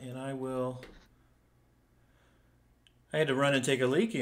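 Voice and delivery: breathless, out of breath. Explaining a quick return after running off: out of breath. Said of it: "I'm out of breath".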